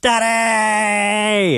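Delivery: screaming. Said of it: "he started screaming last night".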